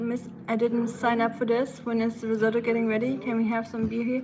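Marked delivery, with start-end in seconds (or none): none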